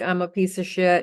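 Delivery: plain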